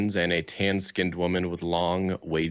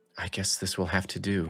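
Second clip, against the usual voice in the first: soft, murmured aside under the breath; 4 dB quieter than usual. Crouched beside him, a woman takes a comb from his pocket, murmuring to herself. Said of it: "she murmurs to herself".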